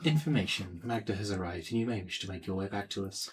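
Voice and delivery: half-whispered, hushed voice. Half-whispering a message to another character in the scene: half-whispering. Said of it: "so I'm gonna whisper to Monica".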